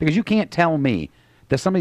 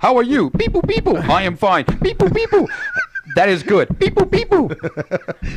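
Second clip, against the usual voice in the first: put-on robotic beep-boop voice, higher pitched; 14 semitones higher, 4 dB louder than usual. Mocking the other speaker's way of greeting people: robotic beep-boop impersonation. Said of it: "That's your impersonation of my".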